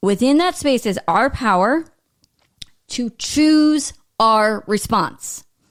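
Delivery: very slow, deliberate delivery, every word weighed. On a podcast about powerlessness, the speaker delivers a key point, said really slowly. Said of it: "I'm going to say that really slowly".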